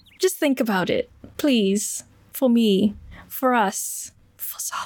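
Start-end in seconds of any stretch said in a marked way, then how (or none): 2.3-4.9 muttered under breath, barely audible, much slower. Role-player speaking in character while rubbing lavender on her hands: muttering under breath. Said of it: "I genuinely didn't hear you".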